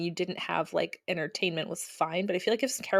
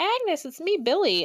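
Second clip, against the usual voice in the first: very high, creepy, unsettling voice; 10 semitones higher, 3 dB louder than usual. Recapping a show scene where a man confronts a woman, imitating a creepy voice. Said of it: "in like this creepy voice".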